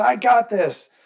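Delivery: put-on high-pitched scream. Describing a man who kept screaming at them, imitating a high-pitched annoying scream. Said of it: "just continuously just scream at us".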